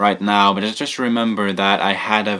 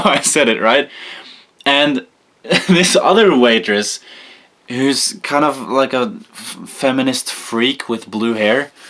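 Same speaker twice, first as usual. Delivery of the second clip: normal talking voice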